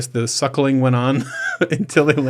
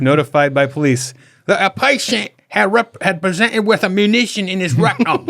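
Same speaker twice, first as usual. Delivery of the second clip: clumsy, bad British accent, pitched up; 6 semitones higher than usual. Reading a news story aloud to the others: bad British accent. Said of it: "I can't do British accent".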